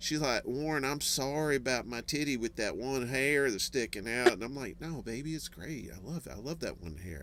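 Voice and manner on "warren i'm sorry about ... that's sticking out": put-on rural country-accented speech. Quoting what she said to him, in a country accent. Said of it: "she had kind of a country accent too".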